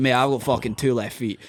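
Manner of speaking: ordinary talk, nothing marked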